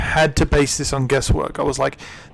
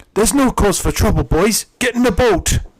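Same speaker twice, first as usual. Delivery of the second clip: put-on a different, higher-pitched English accent. Speaker demonstrates how the second of two English-accented characters sounds, put-on English accent. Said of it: "Both of them have English accents".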